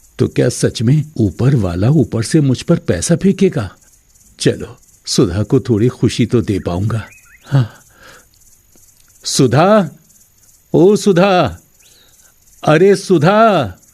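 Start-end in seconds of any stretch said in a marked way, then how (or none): 9.2-13.7 very slow, loud, stretched-out calling shout. A man calls out repeatedly to Sudha: shouting loudly. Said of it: "आप इतनी जोर जोर से क्यों चिल्ला रहे हो?".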